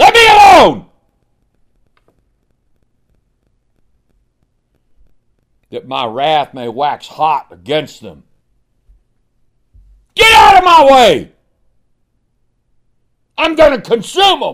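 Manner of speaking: put-on, thundering, very loud, high, swooping, wrathful roar. Speaker illustrating God's words when God got mad, acting out angry God. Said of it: "I've got a pretty good voice for that kind of thing".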